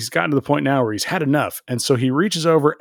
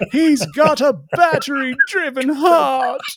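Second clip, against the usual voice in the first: mock yelling, higher; 11 semitones higher than usual. Retelling how a character delivered a line: imitating someone yelling. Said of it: "really wanted to be on stage yelling".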